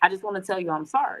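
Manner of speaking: ordinary delivery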